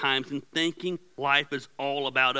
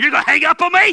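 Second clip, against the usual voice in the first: mock shrill, very high, very loud upset outburst; 13 semitones higher, 13 dB louder than usual. A husband reenacts his wife on the phone with him: retelling an upset yell. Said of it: "I'm yelling at you and I'm upset".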